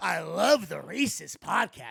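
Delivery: slow, drawn-out, rough, creaky mock troll voice. Retelling what a subreddit commenter says: imitating a subreddit commenter. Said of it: "a certain type of subhuman on subreddit being like".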